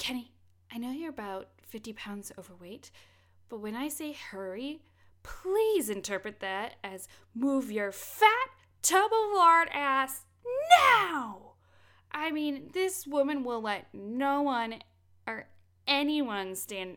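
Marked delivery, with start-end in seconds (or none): 0.0-11.5 loud, rising, mad and exasperated angry tirade. Retelling a scene where Gale snaps at slow Kenny: imitating Gale angrily. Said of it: "she gets mad at him".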